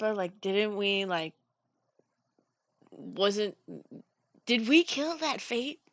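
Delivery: hushed, stumbling half-whispered aside. Asking a companion on the side during the game, half-whispered aside. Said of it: "I'm gonna whisper to Pippa".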